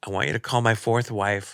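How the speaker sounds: normal talking voice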